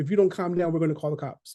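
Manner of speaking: normal talking voice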